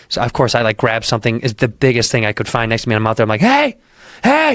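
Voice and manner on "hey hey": put-on shrill, very high shouted yell. Speaker recalls thinking someone was in the house, retelling his own yell. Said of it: "I'm yelling".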